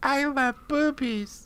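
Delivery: very high, soft, electronically pitch-shifted squeak. Picturing the other speaker pitch-shifting their voice: imitating a pitch-shifted voice. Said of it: "you pitch shifting your voice".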